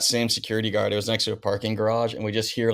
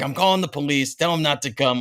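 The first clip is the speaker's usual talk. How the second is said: put-on East Coast accent, pitched higher; 5 semitones higher than usual. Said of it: "I love your JoJo impression".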